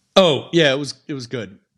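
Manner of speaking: play-acted offhand, dismissive brush-off tone. Retelling a customer's reply to a follow-up call, imitating a dismissive tone. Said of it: "And then like very dismissive".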